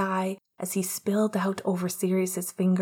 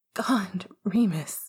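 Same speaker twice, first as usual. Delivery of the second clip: hushed, surprised whisper. A man says another man's name as he is touched: surprised whisper. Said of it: "in a whisper of surprise".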